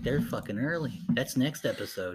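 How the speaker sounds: plain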